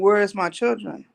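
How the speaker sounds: ordinary talk, nothing marked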